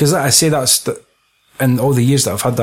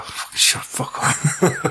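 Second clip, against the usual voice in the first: play-acted mortified, slow whispered swearing; 3 semitones higher, 6 dB quieter than usual. Retelling a film scene, imitating embarrassed Han Solo. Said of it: "proper embarrassed by him".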